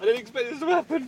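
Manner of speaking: high, panicked, whiny, anxious voice.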